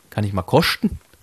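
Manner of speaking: speaking in Swabian dialect. Quoting a woman who seemed a bit disoriented: Swabian dialect. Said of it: "so in diesem schwäbischen Dialekt, so".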